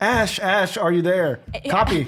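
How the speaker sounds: loud calling out. Playing a scene on a bike, a player calls for a companion who may not have made it: shouting into the radio. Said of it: "So I'm just shouting like".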